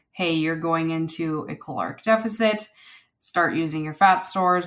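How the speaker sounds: plain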